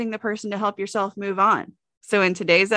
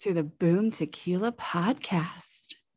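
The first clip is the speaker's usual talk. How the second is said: put-on sexy deep male voice, much quieter; 3 semitones lower, 6 dB quieter than usual. Trying out a sexy voice for the podcast greeting, a put-on sexy deep voice. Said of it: "Why do I get like deep like a man?".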